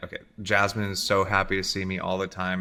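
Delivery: ordinary delivery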